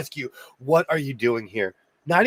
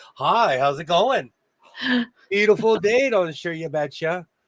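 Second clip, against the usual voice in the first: put-on Minnesota accent, polite and nice; 4 semitones higher than usual. Showing the greeting the speaker gives people, minnesota hello accent. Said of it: "I give them my Minnesota hello".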